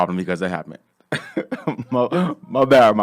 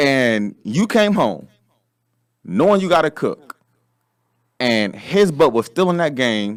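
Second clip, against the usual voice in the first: slow, deliberate, each word carefully spelled out; 2 semitones higher than usual. Making a point to everyone about coming home to cook while he games, saying it slowly. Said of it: "I feel like I got to say this slowly for everybody".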